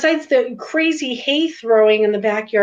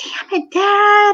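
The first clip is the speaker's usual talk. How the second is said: put-on angry yell, pitched very high, shrill; 10 semitones higher than usual. Retelling how she got angry hauling hay and yelled at her dad, imitating her yelling. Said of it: "yelling at him at one point".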